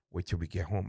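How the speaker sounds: hushed, half-whispered, menacing voice. Retelling a mother's threat in church: imitating a half-whisper. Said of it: "she'll whisper in my ear".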